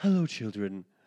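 sugary-sweet, really nice, polite tone. Quoting the same line again: imitating Sideshow Bob saying it really nice. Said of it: "and then really nice".

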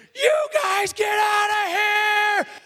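enraged, very high, drawn-out furious shout. Retelling jumping out into the hallway and shouting at the guys: retelling own loud yell. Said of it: "Just as loud as I can".

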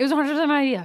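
rapid-fire delivery. Repeating a line after being told to say it faster, very fast. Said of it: "Say it faster".

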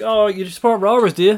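put-on condescending tone. Retelling what a man said to her, in a mock-condescending tone. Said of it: "in a condescending tone".

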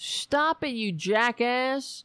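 put-on yelling, drawn out, scolding tone. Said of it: "yelling at him".

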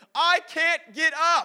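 shrill, very loud, very slow, drawn-out scream. Recounting urging Steven to get up during a bike race, retelling Steven's scream. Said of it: "he's like screaming like".

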